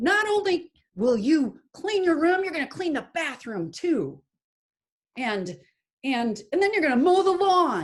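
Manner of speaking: put-on loud, shrill angry mom voice, ranting. Describing a family pattern, playing the mom scolding her child: acting out a loud angry mom. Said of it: "gets loud and says".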